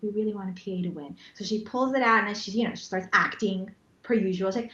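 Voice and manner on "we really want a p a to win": conspiratorial, hushed half-whisper, stage whisper. Retelling what a man half-whispered before a prize winner was drawn, retelling a half-whisper. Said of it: "he kind of whispers like".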